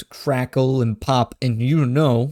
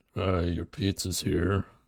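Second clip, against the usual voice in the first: low, gloomy, dejected delivery; 6 semitones lower, 8 dB quieter than usual. Redoing a pizza delivery bit after being told to sound more depressed. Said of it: "you gotta be more depressed".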